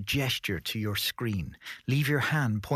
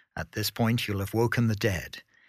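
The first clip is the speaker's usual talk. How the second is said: plain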